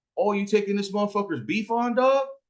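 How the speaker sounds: high-pitched, heated delivery.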